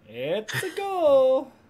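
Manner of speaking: very high, loud, drawn-out cartoon voice. Playing a game with others, Mario impression. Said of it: "That's my best Mario impersonation".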